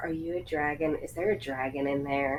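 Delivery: soft, hushed put-on half-whisper, barely audible. Voicing a character approaching a topaz stone on a pedestal: half-whispering in character. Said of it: "she's just gonna whisper".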